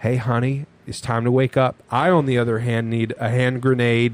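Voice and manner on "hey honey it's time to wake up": put-on gentle loving whisper. Retelling how his wife gets woken up: imitating a gentle loving whisper. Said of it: "a gentle, loving, grabbing them by the arm and a whisper".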